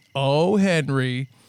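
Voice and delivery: lighthearted, mock fond exasperation. Retelling how a woman said henry's name, in a sitcom-ending delivery. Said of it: "She said it in a closing a sitcom way".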